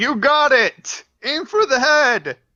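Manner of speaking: very loud rallying battle yell. Voicing a character answering a call for help, character yelling. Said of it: "My guy yells".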